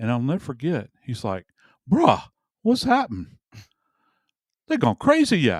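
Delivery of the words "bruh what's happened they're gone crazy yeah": put-on heavy Cajun accent, very high-pitched. Retelling what the roommate said when the window fell, thick cajun accent. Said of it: "he spoke with a very thick Cajun accent".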